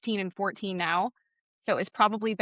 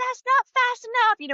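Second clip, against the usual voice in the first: put-on very high, shrill child's shout with a lisped s; 5 dB louder than usual. Speaker retells their young son yelling at them, imitating child yelling with lisp. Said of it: "he'd be yelling at me and he's like".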